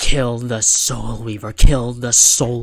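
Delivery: ordinary delivery, nothing marked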